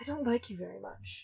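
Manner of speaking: muttered under breath. A character speaks to no one in particular, muttered under breath. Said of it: "under their breath".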